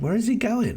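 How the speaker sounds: voice pushed very high in pitch. Wondering aloud where he is going, in a very high voice. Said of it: "I said that in a very high voice".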